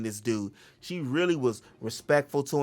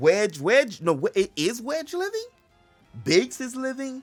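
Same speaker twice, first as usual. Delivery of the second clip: very high, emphatic, rising yell; 11 semitones higher, 3 dB louder than usual. A speaker corrects herself about which characters are still living, yelling. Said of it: "I'm sorry, uh, I'm yelling".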